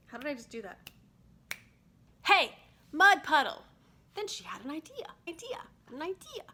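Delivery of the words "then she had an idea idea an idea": voice rising to a squeaky, high pitch. Reading a story aloud, voice going squeaky on 'idea'. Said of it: "Why does my voice get all squeaky when I say idea?".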